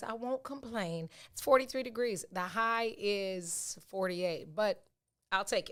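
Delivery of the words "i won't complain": solemn, reverent voice. Repeating that they won't complain about the chilly weather: church voice. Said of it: "in my church voice".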